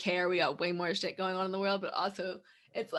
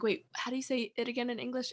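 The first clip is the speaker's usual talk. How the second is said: put-on thick, laid-on Spanish accent; 4 semitones higher, 4 dB quieter than usual. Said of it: "a very heavy Spanish accent".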